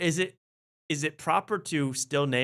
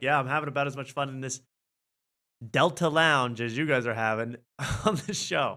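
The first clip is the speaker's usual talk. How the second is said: ordinary delivery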